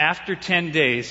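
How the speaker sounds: plain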